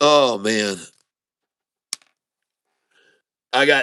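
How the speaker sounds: laughing to tears. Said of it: "I actually have tears I'm wiping out".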